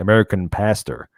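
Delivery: put-on US-style American accent. Repeating the phrase, saying it in an American accent. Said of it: "I should say that in an American accent".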